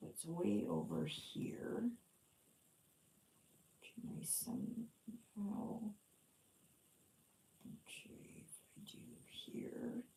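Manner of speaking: whispered mumble under the breath. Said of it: "I'm mumbling to myself".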